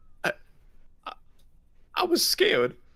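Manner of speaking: as pitiful as possible, very high little voice. Retelling what a man poking his head out of ropes said, mock-pathetic voice. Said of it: "in the most like pathetic voice he possibly can".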